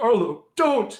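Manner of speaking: very high, shrill, very loud cry. Voicing a captain in chains calling from behind: crying out. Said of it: "this other cry from behind you".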